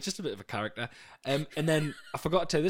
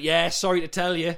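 loud, raised shout, called out; 4 semitones higher, 7 dB louder than usual. Retelling what a woman said to them: imitating someone shouting. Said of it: "You just shouted it at us".

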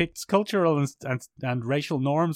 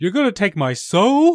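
very loud, very high, pitched-up, belted-out holler; 8 semitones higher, 9 dB louder than usual. Retelling a favourite film scene: Brendan Fraser impression. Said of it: "an excellent Brendan Fraser impression".

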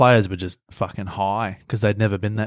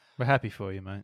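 very quiet, flat, lifeless, dead-inside delivery; 10 dB quieter than usual. Congratulating a mate while recording with the guys, sounding a bit dead inside. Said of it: "You sound a bit dead inside".

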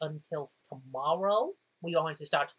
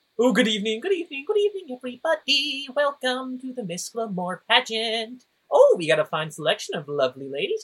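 loud, swooping, very fabulous elf man voice; 7 semitones higher, 7 dB louder than usual. Narrating an elf man welcoming everyone to a pageant, fabulous elf man voice. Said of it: "a very fabulous elf man walks in and goes".

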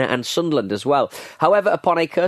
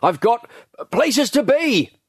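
put-on frustrated raised voice, very high, drawn-out; 10 semitones higher than usual. Reading an account of a customer leaving after his purchase, raised voice like Partridge. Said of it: "he raised his voice in the same tone that Partridge does".

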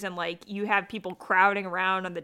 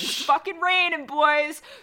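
put-on scream, higher and louder; 8 semitones higher, 4 dB louder than usual. Retelling screaming at cactuses in the desert: imitating own screaming. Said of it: "I was screaming at them".

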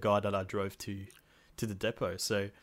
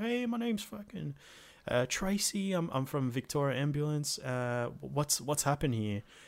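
breezy put-on American twang, pitched up; 5 semitones higher, 4 dB quieter than usual. Retelling a paramedic arriving and asking what happened, american accent. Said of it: "she's sounding american".

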